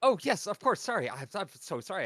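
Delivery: tumbling, babbling speech. A player voicing their character stepping through a gate, babbling. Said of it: "And as I continue babbling".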